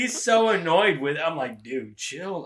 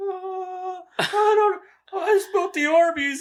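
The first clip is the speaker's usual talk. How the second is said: mock very slow, very high, drawn-out child's wail. Retelling how a son answered while bawling: imitating a child bawling. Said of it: "And he's already bawling".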